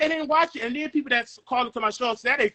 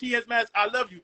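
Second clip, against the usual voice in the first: ordinary delivery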